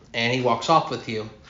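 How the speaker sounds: normal talking voice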